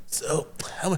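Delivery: hushed whispering voice. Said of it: "I would have to hear this guy say".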